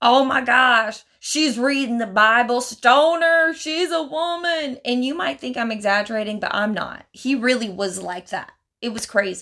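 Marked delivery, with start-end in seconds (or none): 0.0-4.8 acted, outraged, scandalized rant, loud and high-pitched. Retelling how a man reacted to a woman reading the Bible, mock-angry rant. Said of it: "he was so mad".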